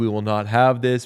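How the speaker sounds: ordinary talk, nothing marked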